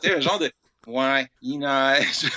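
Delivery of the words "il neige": mock-weary, despairing tone with falling intonation. Speaker recounts a character's line about the snow, imitating a falling despairing tone. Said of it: "dit avec un ton, une espèce de, d'accent tonique".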